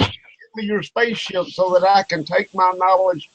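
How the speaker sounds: grand thundering booming voice from on high. Retelling a movie scene on a planet where God speaks; thundering God voice. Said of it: "God said in his thundering voice".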